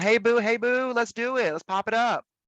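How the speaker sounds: voice, not straight or low. Showing how you talk when back in Austin: Austin voice, not straight or low. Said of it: "But when I come back to Austin".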